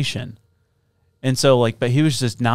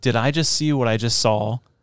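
ordinary talk, nothing marked

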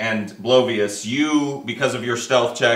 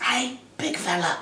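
put-on small, soft street kid voice; 9 semitones higher, 6 dB quieter than usual. Narrating a scene, the speaker voices a street urchin calling from an alleyway: little street urchin voice. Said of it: "You see like a little street urchin".

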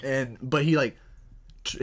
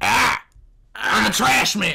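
high, loud, gravel-free yelling gremlin voice, tiny brute. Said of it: "I don't know, Danny DeVito? Being like".

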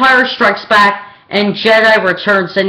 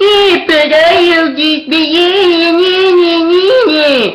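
high, crying whine, imitated. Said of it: "That's how whiny Anakin is".

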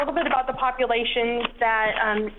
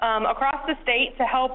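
ordinary talk, nothing marked

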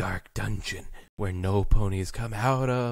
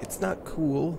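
ordinary talk, nothing marked

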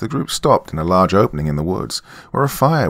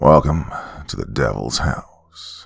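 silky, smooth, slow, snake-like voice; 7 semitones lower than usual. Reading a story where a suited man welcomes visitors at the gates: smooth, almost snake-like voice. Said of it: "With a smooth, almost snake-like voice".

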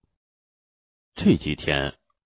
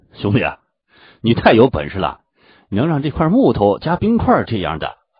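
ordinary delivery, nothing marked

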